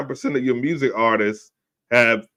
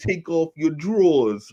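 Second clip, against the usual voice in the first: high-pitched, put-on New York accent; 5 semitones higher than usual. Retelling a woman's demand to a reluctant man, imitating her New York accent. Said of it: "she got that New York accent".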